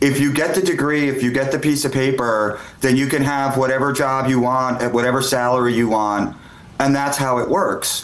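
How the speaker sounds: normal talking voice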